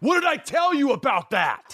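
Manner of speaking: mock abrupt, angry scolding shout, very high-pitched. Speaker recalls a man whose yelling always scared them; retelling his scary yell. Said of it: "when he yelled, it just always scared me".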